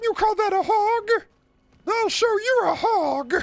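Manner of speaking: very high-pitched puppet-style voice. Breaking out voices the speaker can do, a Miss Piggy voice. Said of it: "break out the Miss Piggy".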